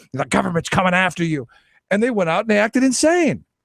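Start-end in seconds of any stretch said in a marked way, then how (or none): none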